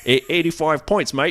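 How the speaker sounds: put-on Australian accent.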